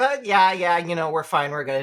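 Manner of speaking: put-on dismissive teen voice. Retelling a scene, the speaker voices Misumi answering a worried question, mock-dismissive teenager. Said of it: "in kind of that dismissive teenager way".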